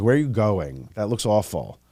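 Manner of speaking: ordinary talk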